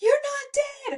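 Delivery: very high, loud, overjoyed relieved yelling.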